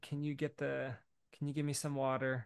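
put-on sweet groggy voice. A father retells his groggy daughter waking at night, imitating her sweet request. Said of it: "She's asking all of it super sweet".

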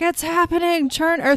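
acted, shrill, gleeful shriek, very high pitch. Retelling an episode scene, acting out the Master: imitating the Master screaming delightedly. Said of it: "He's screaming. He's so delighted".

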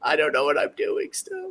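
flustered, nervous voice with high sing-song rise. Describing a man on a show whose friends ask him to stop, imitating a nervous guy. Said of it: "he's just like all nervous".

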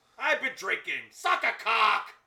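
slow, very loud, drawn-out screaming. Trading jokes while watching a film with others: screaming. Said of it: "Stop screaming at me".

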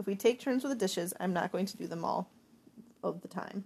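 ordinary delivery, nothing marked

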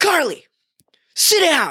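very high, bossy, swooping yell. Retelling a man yelling at ten-year-old girls, retelling a yell. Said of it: "He's like yelling at these girls".

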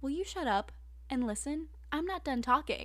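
put-on voice, all sass and attitude. Retelling an anime fight scene, acting out Kaneki's words: sassy Kaneki impression. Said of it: "And all sassy".

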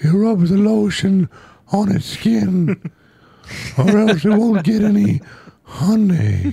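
very high, very slow cartoon-bear voice dragging words. Trying out an impression on the others: Winnie the Pooh voice. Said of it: "I've been working on my Winnie the Pooh impression".

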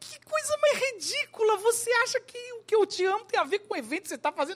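very high voice, talking through laughter. Retelling the father's reply after being pulled aside again, imitating dad laughing while talking. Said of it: "Aí ele ria".

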